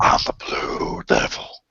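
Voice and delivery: whispered, strange, weird-sounding devil voice. Recalling what he did when he was little, the speaker does a weird devil voice. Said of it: "you make that weird voice".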